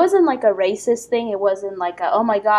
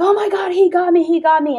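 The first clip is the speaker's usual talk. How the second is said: shrill, very high, pained scream; 9 semitones higher, 3 dB louder than usual. Recounting hearing a man scream after being hit, imitating a man screaming. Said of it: "he was screaming".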